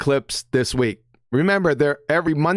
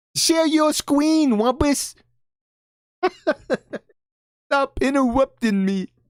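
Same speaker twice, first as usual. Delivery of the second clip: put-on cartoon voice, pitched higher; 9 semitones higher than usual. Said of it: "when he sounded like Elmer Fudd".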